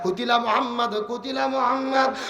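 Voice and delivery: shouted call, loud and high.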